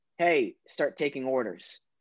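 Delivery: ordinary talk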